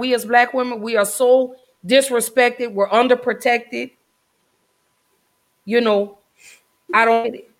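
holding back emotion, struggling to stay composed. Talking with another speaker about a post that moved her, holding back emotion. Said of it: "I'm trying not to get emotional".

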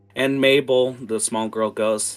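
ordinary talk, nothing marked

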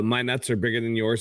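ordinary talk

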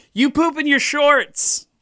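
very high, shrill, high-pitched yell. Acting out a kid's insult to the bad kids from a script, retelling a yell. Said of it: "He yells".

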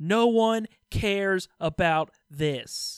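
very loud, very slow, high-pitched bellowed scream. Retelling a wrestler screaming at Lana: Kevin Owens screaming. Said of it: "Kevin Owens just screaming at her".

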